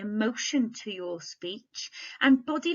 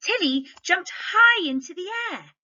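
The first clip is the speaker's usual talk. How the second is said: excited, high and raised voice; 9 semitones higher, 7 dB louder than usual. Reading a story sentence aloud to show how it's said, excited tone. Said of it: "I did say it with quite an excited tone".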